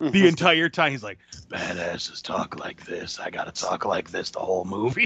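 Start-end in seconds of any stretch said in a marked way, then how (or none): 1.5-5.1 very low, barely whispering voice. Mocking how the action hero talks in the film: Kurt Russell's Snake voice. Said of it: "Kurt Russell's Snake voice 'cause he never gets above a whisper".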